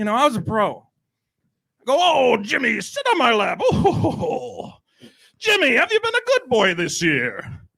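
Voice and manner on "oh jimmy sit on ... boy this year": jolly tone with big sing-song pitch swoops. Retelling how he talked to a kid named Jimmy, Santa Claus voice. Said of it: "I do the voice".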